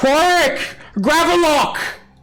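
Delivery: loud, high-pitched yelling. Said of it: "she yells out".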